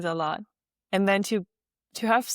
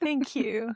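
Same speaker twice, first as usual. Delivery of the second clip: choked-up, teary, fighting back tears; 4 semitones higher, 3 dB quieter than usual. Thanking the other speaker after kind words, holding back tears. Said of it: "I'm not gonna cry".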